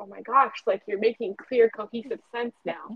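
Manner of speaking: plain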